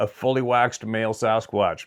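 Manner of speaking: normal talking voice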